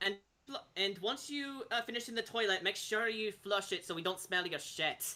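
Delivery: put-on Scottish brogue. Speaker voices a member of the Martikov family; Scottish accent. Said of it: "Martikov family has Scottish accents".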